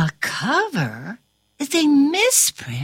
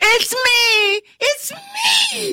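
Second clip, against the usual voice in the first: triumphant, exultant shout, very high, slow and drawn-out. Narrator reading a story, Caleb reveals himself to Kate: shouting exultantly. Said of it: "he shouted exultantly".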